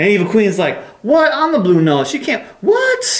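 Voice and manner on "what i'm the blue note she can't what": mock very high, swooping, panicked freaking out. Acting out an evil queen character learning she's been replaced: freaking out. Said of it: "she's, like, freaking out".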